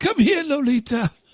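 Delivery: very high, strained voice, called out. Doing a James Mason voice from Lolita: James Mason voice. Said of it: "That's my James Mason, uh, voice".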